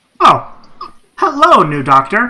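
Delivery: high, loud, mechanical service-robot voice. Voicing a robot greeting a player's character: robot voice. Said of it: "Merv, the robot, turns at you and, and says".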